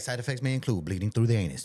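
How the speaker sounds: rapid-fire announcer voice. Mocking how drug ads rush through side effects: Micro Machine Man fast talk. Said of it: "breeze through the side effects so fast, like the Micro Machine Man".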